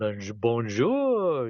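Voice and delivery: bonjour in put-on French accent, stumbling start. Showing the voices from self-made commercials: French person impersonation. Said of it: "an impersonation of, uh, like, a, a French person".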